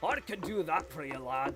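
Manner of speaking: somewhat Irish-Scottish put-on accent. Offering to do an accent for whoever needs one: somewhat Irish-Scottish accent. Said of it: "can do somewhat of an Irish slash Scottish accent".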